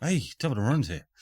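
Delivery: put-on Irish-accented voice. The ginger guy character greeting, with an Irish accent. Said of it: "he's still he's Irish again".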